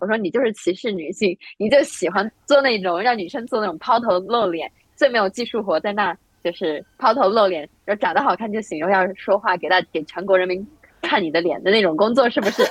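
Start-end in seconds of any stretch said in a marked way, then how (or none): none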